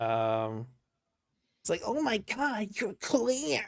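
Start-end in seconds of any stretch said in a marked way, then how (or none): 1.9-3.7 annoying anime protagonist voice. Describing a character by imitating his voice: annoying anime protagonist voice. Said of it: "sounds like a really uh stereotypical anime protagonist with this like really kind of uh annoying voice".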